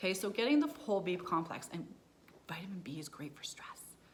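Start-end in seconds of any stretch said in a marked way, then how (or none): 1.7-3.8 dropped to a soft, hushed whisper. Speaker explaining B vitamins to listeners, whispering. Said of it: "I don't know why I'm whispering that".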